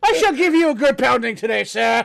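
put-on loud, high-pitched, old-timey 1800s-style gentleman voice. Riffing on the word fisticuffs and picturing an 1800s fight, in an 1800s-style gentleman voice. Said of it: "I was thinking like 1800s".

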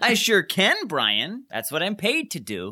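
fake, disingenuous delivery. Mocking the other speaker's reply, repeating it back: imitating a disingenuous tone. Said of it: "That sounded so disingenuous".

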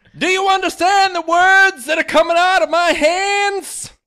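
very high, furious top-of-lungs shout, words drawn out. Reading a parody scene aloud, a husband yelling at his wife: acted shout at top of lungs. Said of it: "Jack Torrance shouts at his wife at the top of his lungs".

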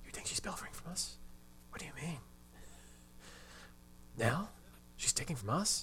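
odd, breathy, hushed whisper, very quiet, barely audible. Recapping the plot, voicing Emily's mom's reply: put-on weird hushed voice. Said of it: "talks in such a weird, hushed voice".

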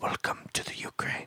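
very soft, breathy whisper, close to the ear. Retelling what a woman whispered into the speaker's ear, retelling a whisper. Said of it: "just whispers".

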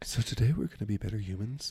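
public radio announcer tone. Joking with others, a speaker redoes a line in an NPR voice. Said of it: "that's a good NPR voice".

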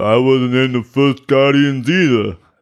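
exaggerated thick put-on voice. Joking on a podcast about an actor's film credits, in a thick impression voice. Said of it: "in that think voice?".

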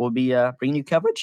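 voice cracking and breaking. Closing out a show alongside a co-host, voice cracking. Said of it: "oh gosh, voice crack".

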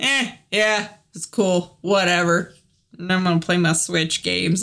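bored, unenthusiastic brush-off. Retelling the daughter shutting the airplane window: imitating daughter's unenthusiastic tone. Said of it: "She's like".

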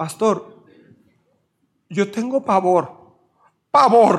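slow, weepy, tearful voice breaking on the words. Pastor retelling a woman's words about her fear, imitating a tearful, breaking voice. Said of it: "así con lágrimas y con la voz quebrada".

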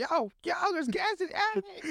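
very high, slow, squawking talking-parrot voice. Joking about a talking bird warning of gas: talking parrot voice. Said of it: "Like a parrot".

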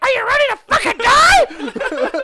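squeaky, very high, swooping, loud, slow cartoon voice. Retelling a board game moment, speaker quotes Austin's line in the Toad voice. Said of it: "in the Toad voice".

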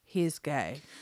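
put-on deadpan, sarcastic. Recounting a group discussion, the speaker quotes the woman's sudden remark, mock deadpan sarcasm. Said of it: "It was like, like deadpan sarcasm".

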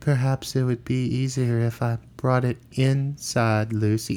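weird, soft, dreamy, clipped way of talking. Retelling what a man says to lucy at her door: imitating weird, dreamy, clipped accent. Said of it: "he talks in that kind of weird, dreamy, clipped accent".

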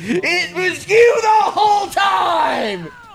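loud, high-pitched shouting.

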